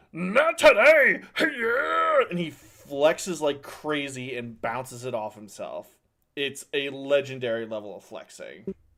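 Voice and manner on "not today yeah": loud, piercing, shrill, booming monster screech. Game master voicing a monster as an attack sinks into its skin: screeching monster shout. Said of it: "his entire form just screeches out".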